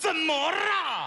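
slow, drawn-out, defiant shout.

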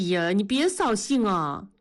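plain reading voice

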